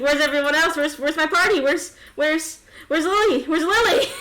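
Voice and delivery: panicked and frantic. In a tabletop game, a character who just woke up alive asks where his party is; panicked and frantic. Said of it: "you're gonna have to relax".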